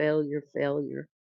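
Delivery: put-on whisper. Retelling a scene where a dark lady finally answers him, retelling a whisper. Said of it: "she whispers like".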